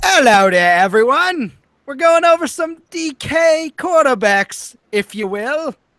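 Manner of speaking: very high, very slow, warping fake British accent. Greeting everyone at the start of the video: put-on accent, British morphing into strange. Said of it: "What kind of accent was that".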